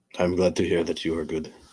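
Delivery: put-on French accent on English speech. A caller on a stakeout phone call, slipping back into a french accent. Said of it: "you're doing the accent again".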